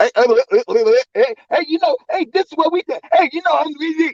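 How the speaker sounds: very high voice, chattering, cutting in. Imitating someone who keeps cutting others off: mocking imitation of someone interrupting.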